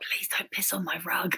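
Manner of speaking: whispering. Joking about being a dog whisperer, pleading with the dog in a whisper. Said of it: "I could just whisper".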